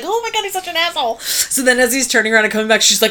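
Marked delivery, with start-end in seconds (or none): 0.0-1.2 very high, giggly, gossipy voice. Retelling a woman's two girlfriends reacting to a man's call: imitating girlfriends giggling.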